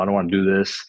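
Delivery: put-on crying, tearful voice. Retelling a phone call with a father, imitating own past crying. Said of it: "crying on the phone".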